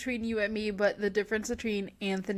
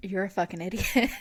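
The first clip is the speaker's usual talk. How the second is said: mock, put-on condescending voice; 2 semitones lower than usual. Imitating a husband reacting to a friend: imitating Nate being condescending. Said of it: "condescending look".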